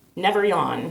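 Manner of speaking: ordinary talk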